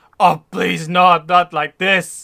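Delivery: very loud, high, shrieked begging plea. Voicing a bandit captain begging as he starts to die: screaming plea. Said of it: "he screams and screams".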